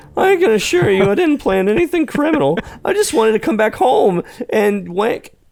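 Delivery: put-on elderly man voice. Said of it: "went to my old man voice".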